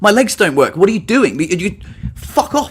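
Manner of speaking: exasperated, fed-up, angry shouting. Telling how french strangers tried to stand them up after a fall: retelling a shout. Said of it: "I'm shouting at them in English".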